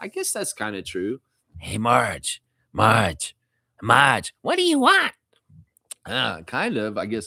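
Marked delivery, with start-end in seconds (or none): 1.6-5.1 animated, swooping, sing-song cartoon voice going up and down. Reading a chat comparison, then imitating Selma and Patty: Selma and Patty voice. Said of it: "sounds like Selma and Patty from The Simpsons".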